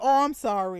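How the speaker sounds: bone-dry, very dry, uncaring tone. Retelling how she apologized to him: imitating a very dry tone. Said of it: "in a very dry tone".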